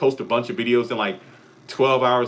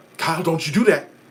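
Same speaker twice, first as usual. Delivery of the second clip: urgent tone, pitched higher than usual; 6 semitones higher than usual. Comparing how characters sound, doing one of Donald's lines, urgent Donald voice. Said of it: "more of an urgency in Donald's voice".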